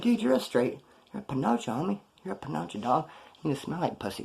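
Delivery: muttered under the breath. Retelling trading insults with a guy on the bus, muttered under the breath. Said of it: "we're talking shit under our breath".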